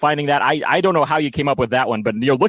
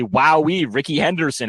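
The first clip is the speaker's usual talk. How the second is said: mock ironic wow, not impressed at all. Imitating a childhood friend who was not impressed: imitating a friend's sarcastic tone. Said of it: "go sarcastically".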